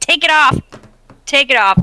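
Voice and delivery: urgent, insistent, pressing, said twice over. Shouting in character at another player to take it off: shouting. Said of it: "I'm just gonna shout".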